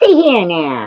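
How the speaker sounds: hard, tough gangster voice. Showing viewers how they have to say it, in a gangster voice. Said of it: "That's how you have to say it".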